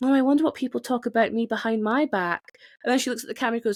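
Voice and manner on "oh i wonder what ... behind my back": play-acted glum, sullen, mopey wondering aloud. Speaker retelling a woman's line from a talking head, mock-sullen. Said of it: "she says really like sullenly".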